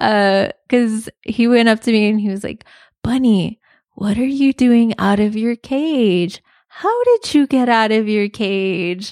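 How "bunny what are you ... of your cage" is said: put-on creepy kid voice, cage stretched out long. Retelling a kid who came up and pulled at the bunny's arm: imitating a creepy kid's talk. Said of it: "Why are you talking like that?".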